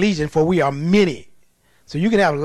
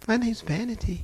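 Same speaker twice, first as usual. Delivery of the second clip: mock gentle, meek, sweetly polite, demure voice; 4 semitones higher, 9 dB quieter than usual. Retelling a demon's reply during a deliverance: imitating a sweet, demure voice. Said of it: "She sounded just as sweet and demure".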